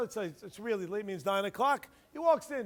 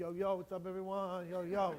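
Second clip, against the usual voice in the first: put-on swaggering, cocky kid voice, lower and quieter; 3 semitones lower, 6 dB quieter than usual. Acting out a kid walking into school: imitating a swaggering kid. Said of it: "this is how he walks in".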